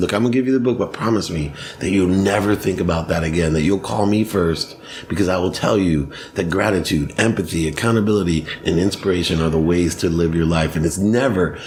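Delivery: ordinary delivery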